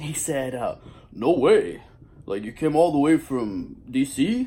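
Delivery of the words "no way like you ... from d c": loud, swooping put-on voice. Retelling meeting his hero after traveling from DC, imitating his hero's voice. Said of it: "I'll do his voice".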